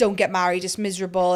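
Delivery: ordinary talk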